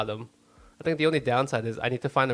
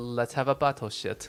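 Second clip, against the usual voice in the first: put-on British accent. Quoting two girls from a movie in a put-on British accent. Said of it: "you did the accent".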